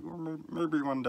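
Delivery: high-pitched puppet-character voice. Speaker voicing their own past hesitation about an author: Muppet voice. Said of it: "I don't know why I went into a Muppet voice there".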